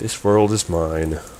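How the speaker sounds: put-on bored, flat reading. Quoting a performer's line while critiquing her delivery; imitating a flat, bored delivery. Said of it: "she just sounds bored".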